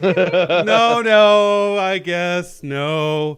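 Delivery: lazy, drawn-out delivery. Retelling how Jules stopped a fireball, imitating Jules lazily refusing. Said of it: "she kinda gets lazy about it and is like".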